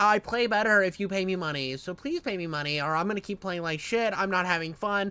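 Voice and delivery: acted, mocking, whingeing whiny moan. Mocking someone who plays better when paid: imitating Phil whining. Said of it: "you sit here and whine".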